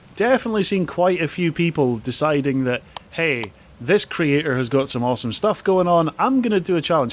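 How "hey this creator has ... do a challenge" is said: plain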